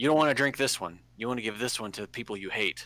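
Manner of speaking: put-on scraggly old wizard character voice. Voicing a wizard who offers the party potions: scraggly old wizard character. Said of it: "he's like".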